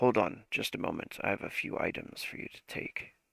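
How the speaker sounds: low, deep-pitched voice. Storyteller giving the line of a voice heard in the scene, deeper voice. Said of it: "the deeper voice say".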